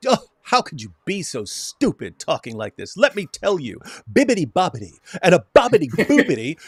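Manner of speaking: condescending know-it-all tone, swooping sing-song pitch. Acting out how someone speaks condescendingly, mock-condescending tone. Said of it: "Speak in a condescending fashion".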